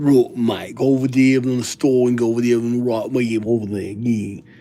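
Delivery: put-on English accent, chatty and rambling. Mocking how people from England talk: imitating English speech. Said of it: "someone from England".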